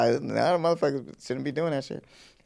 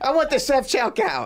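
odd mocking put-on voice, higher; 13 semitones higher, 4 dB louder than usual. Imitating a friend demanding the self-checkout at the store: odd put-on voice. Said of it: "I don't know why I'm saying it like that".

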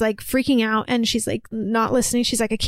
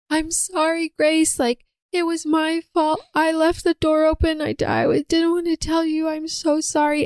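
put-on heartbroken sobbing, higher pitch; 5 semitones higher than usual. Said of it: "really heartbreaking sobs from earlier".

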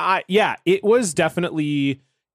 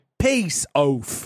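exaggerated put-on British accent. Describing how his fiancée says one phrase, Becca's over-the-top British accent. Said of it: "she says it like oaf".

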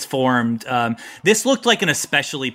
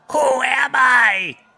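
high, slow, loud, drawn-out confused turtle voice. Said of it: "the turtle looks up at you and says".

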